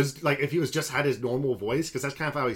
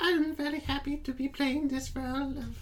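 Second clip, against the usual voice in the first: little birdlike voice, slow and very high; 12 semitones higher, 3 dB quieter than usual. Imitating an actress speaking in an interview: Mia Goth impression. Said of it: "and then you just see her in an interview. She's like".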